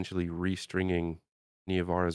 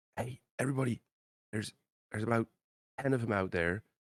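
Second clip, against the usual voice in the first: louder stage whisper that won't carry far; 4 semitones higher, 3 dB quieter than usual. Speaking in character to the group, warning about enemies outside: loud whisper. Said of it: "a louder whisper so it doesn't, doesn't travel".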